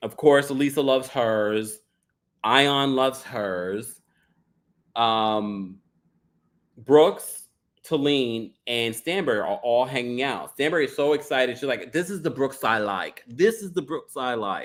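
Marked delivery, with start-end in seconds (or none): 11.9-14.7 loosely put-on, imperfect English accent. Retelling a scene, quoting Stanbury in an imperfect English accent as Stanbury. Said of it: "not not the proper English accent".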